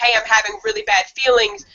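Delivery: ordinary delivery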